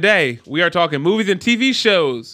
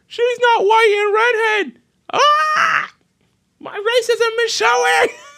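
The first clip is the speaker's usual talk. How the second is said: mock whiny complaining voice, very high and slow. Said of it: "a lot of people are".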